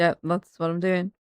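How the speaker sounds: put-on flat delivery. Imitating the deadpan lines of someone on screen: imitating deadpan delivery. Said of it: "deadpan things".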